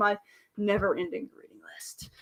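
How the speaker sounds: rueful, soft, unvoiced whisper.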